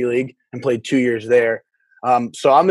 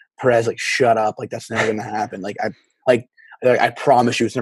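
normal talking voice

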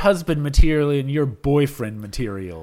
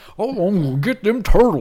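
put-on preposterously thick, high-pitched Cajun accent; 5 semitones higher than usual. Describing a Teenage Mutant Ninja Turtles alligator character, doing Leatherhead's Cajun accent. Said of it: "like Cajun accent".

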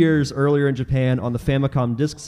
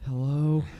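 put-on sleepy voice, quieter; 6 dB quieter than usual. Imagining being woken by a late-night phone call: imitating being woken from sleep. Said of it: "I'm gonna be dead asleep and be like".

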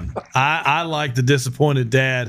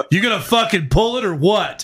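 put-on pitched-up calling out, as if from behind; 6 semitones higher than usual. Retelling someone behind them during a deadlift, in a booming voice. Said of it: "I hear this booming voice come from behind me".

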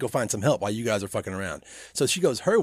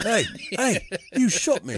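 slower put-on English or Australian accent; 8 semitones higher than usual. Speaker quotes a character from the story who was shot, put-on English accent. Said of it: "why does he get an English accent all of a sudden?".

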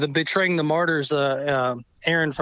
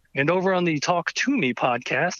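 announcer-style radio voice. Guest retelling how a radio show credited him, in a radio announcer voice. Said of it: "the radio voice guy comes over and says".

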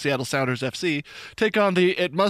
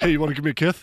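speaking with a lisp. Speaker who just had a tooth removed jokes around, sounding like Mike Tyson. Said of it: "I sound like Mike Tyson".

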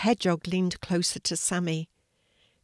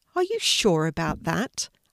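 plain reading voice

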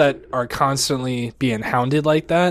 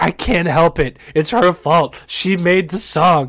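mock hysterical laughing, words breaking up. Retelling own reply to the general manager, imitating hysterical laughter while talking. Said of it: "as I'm laughing hysterically".

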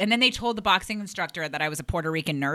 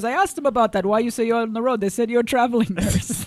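put-on West African accent, pitched higher; 4 semitones higher, 4 dB louder than usual. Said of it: "West African, I'm not doing that impression right".

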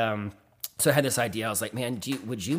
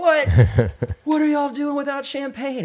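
excited yell, much higher, louder; 10 dB louder than usual. Retelling how a man reacted to news of an engagement, retelling an excited yell. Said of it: "He's like yelling the whole time".

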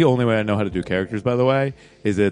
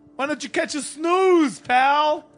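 put-on worn-out New York man's accent, pitched very high. Riffing on a new character with the others, speak as a tired new york guy. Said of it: "tired New York guy".

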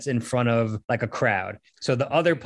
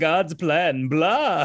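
vampire character voice; 4 semitones higher than usual. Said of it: "you have to do it in like a vampire voice".

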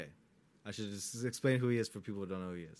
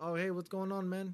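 put-on higher, easy, relaxed British accent. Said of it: "Like, with his British accent".

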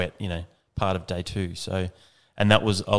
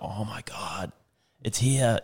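very slow, drawn-out, thrilled, excited disbelief; 3 semitones higher than usual. Retelling a lady spotting the electric Harley: imitating an excited woman.

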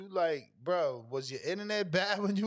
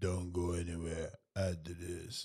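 very low, flat, lifeless, dead monotone; 10 semitones lower, 5 dB quieter than usual. Mocking how the other speaker sounded announcing: imitating Danny's dead-sounding voice. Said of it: "he's all dead".

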